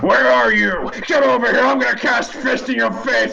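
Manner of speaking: very high, shrill, brash strongman shout. Voicing a revived wizard who sits up: shouting in strongman voice. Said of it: "just sits up and shouts".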